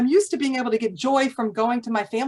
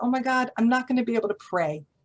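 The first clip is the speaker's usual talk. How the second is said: imitated crying. Retelling a story character who wakes up in jail: imitating crying. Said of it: "he starts crying 'cause he's like".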